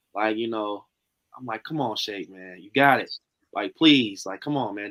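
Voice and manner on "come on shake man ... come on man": put-on pleading, lower and louder. Retelling how the speaker urged a hesitant friend to join: retelling own begging. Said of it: "I'm damn near kinda, like, begging him".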